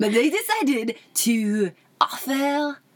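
high acted French accent. Speaker switching accents mid-explanation, now speaking in a French accent. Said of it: "Now it's French".

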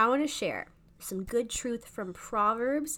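slow, careful pace.

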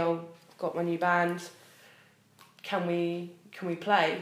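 ordinary talk

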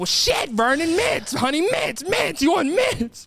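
put-on fed-up yelling, pitched way up, shrill. Storyteller voicing a woman offering mints to her partner who can't hear, imitating a woman yelling. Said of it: "you ain't got to yell at me".

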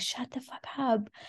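put-on shouting. Retelling what someone inside a flat yelled after a dog barked: imitating someone shouting. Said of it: "someone from inside the flat was shouting".

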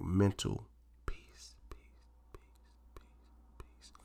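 calm, slow, soothing whisper. Mid-rant to listeners, repeating a phrase in a calm voice. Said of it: "I just did the calm voice".

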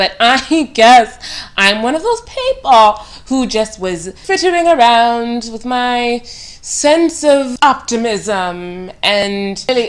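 sudden slip into a British accent. Talking to a girl about having been optimistic, in a sudden British accent. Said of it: "why do I have a British accent all of a sudden?".

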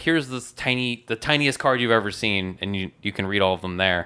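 plain

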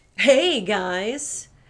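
grating, annoying put-on voice with "guys" drawn out. Greeting the guys in a put-on voice the other speaker hates. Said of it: "there's that voice I hate so much".

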